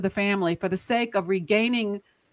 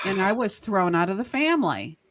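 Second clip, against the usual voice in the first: ordinary delivery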